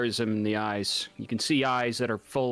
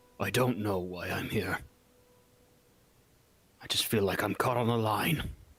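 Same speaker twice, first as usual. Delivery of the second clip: low, gruff, rough-edged voice; 2 semitones lower than usual. Narrator voicing Samuel's reply to the group, in a low, gruff voice. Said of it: "in a low, gruff voice is".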